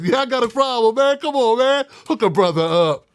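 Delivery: put-on playful, joking, laughing tone. Speaker acting out how another man would have said it, imitating a joking, laughing tone. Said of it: "I was joking when I said it. I was laughing".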